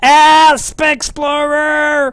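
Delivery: high, slow, drawn-out yell.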